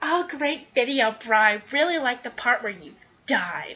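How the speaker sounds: put-on annoying, sassy, sarcastic voice. Imitating a rude viewer comment on the video: imitating a sassy, annoying commenter. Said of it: "something really sassy and annoying".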